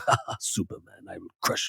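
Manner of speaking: breathy, hushed, gloating villain voice.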